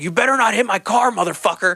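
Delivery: high, screamed, put-on shouting voice. Retelling a pizza delivery man running past a crashed driver: imitating someone screaming.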